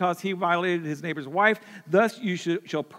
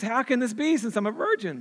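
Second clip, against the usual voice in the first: voice cracks mid-line; 5 semitones higher than usual. Retelling the angel story, quoting the reply to the angel, voice cracking. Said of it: "my voice just cracked".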